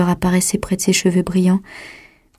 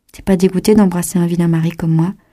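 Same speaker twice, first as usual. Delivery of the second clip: plain reading voice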